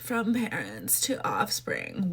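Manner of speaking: swooping sing-song line, pitch moving all over. Mocking how the ad line was said: imitating Sydney Sweeney's delivery. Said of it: "why did she say it like that?".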